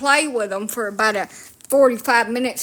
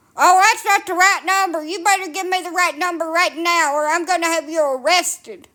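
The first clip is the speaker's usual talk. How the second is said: high, furious, threatening screaming; 7 semitones higher than usual. Retelling a phone scammer getting mad: imitating a scammer screaming. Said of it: "start screaming at me".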